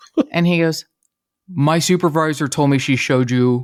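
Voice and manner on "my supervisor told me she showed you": slow serial-killer voice, each word stretched out. Retelling Ed Kemper confronting a man in his cell: Buffalo Bill voice. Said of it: "I make him sound like Buffalo Bill".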